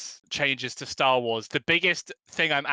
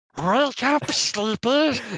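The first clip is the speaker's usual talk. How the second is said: put-on creature voice, much higher; 9 semitones higher than usual. Retelling waking the parents on Christmas morning, as the sister asked: Gollum voice. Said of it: "I used to do a really good Gollum".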